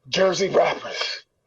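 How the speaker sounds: grudging, fed-up, exasperated mutter under the breath. Retelling how the radio DJ played his record: imitating Mister Magic muttering, exasperated. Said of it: "he definitely said under his breath".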